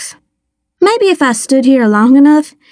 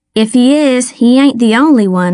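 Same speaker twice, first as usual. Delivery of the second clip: ordinary delivery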